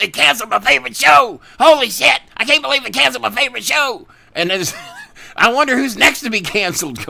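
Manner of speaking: very high, loud, frantic meltdown. Describing a South Park scene to another speaker; imitating Cartman losing it. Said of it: "Cartman was losing his fucking mind".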